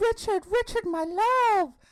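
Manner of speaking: shrill, very high-pitched, loud, full-voiced desperate shout. Retelling how a handcuffed woman, led past the office, calls to a man: imitating someone shouting. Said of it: "And she shouts".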